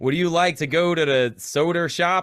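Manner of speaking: put-on American accent. Asked to show an american accent: put-on american accent. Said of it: "You do an American accent. Let's hear it".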